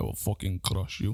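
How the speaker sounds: put-on intimidating Russian accent. Playing with accents after being told they rolled their R; intimidating Russian accent. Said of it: "It's right in tense accent, isn't it? Russian".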